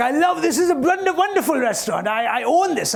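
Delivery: mock male Indian accent. Retelling a man who claimed he owned a restaurant; put-on indian accent. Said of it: "(INDIAN ACCENT)".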